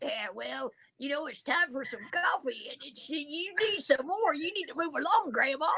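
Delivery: made-up, put-on talking dog voice. Telling a story where the dog answers Grandma, in a talking dog voice. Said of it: "and then the dog's like".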